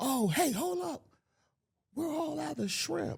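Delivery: put-on very high, shouted holler. Retelling what a man yelled out the window: retelling a yell out the window. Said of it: "he's yelling out the window".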